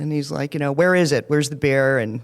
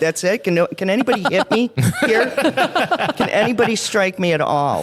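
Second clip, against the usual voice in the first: put-on laughter through words, giggly and high-pitched; 6 semitones higher than usual. Retelling reacting to the yelling in basic training, imitating own giggling. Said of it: "and I'm giggling, going".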